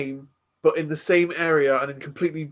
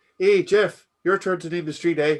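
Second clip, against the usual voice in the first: put-on Canadian accent drifting into Irish; 2 semitones higher than usual. Joking about street naming in Canada: put-on Canadian accent drifting Irish. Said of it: "it's turned kind of, like, French Canadian".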